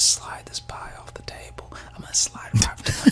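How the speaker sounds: soft, breathy whisper under the breath. Acting out what two women in a video might whisper: imitating someone whispering. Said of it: "what I'd like to believe they were whispering".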